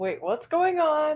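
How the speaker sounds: sudden, high, freaked-out, confused alarm. Voicing Rayanne as a sword is drawn: freaking out. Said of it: "Rayanne's just kinda freaking out".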